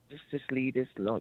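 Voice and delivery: ordinary talk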